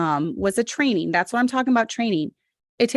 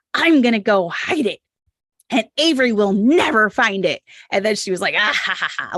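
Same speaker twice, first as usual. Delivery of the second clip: put-on small child's evil villain laugh; 4 dB louder than usual. Retelling what a little girl said with a big smile: imitating a child's evil laugh. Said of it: "laughing this evil laugh".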